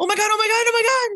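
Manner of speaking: panicked high-pitched yelling. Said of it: "our chat yelling".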